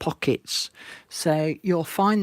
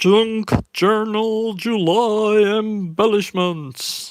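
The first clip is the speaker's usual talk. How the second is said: loud put-on American announcer voice, july drawn out; 5 semitones higher, 5 dB louder than usual. Presenting a journal idea to viewers, in a big American announcement voice. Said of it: "I ought to have that big American announcement voice".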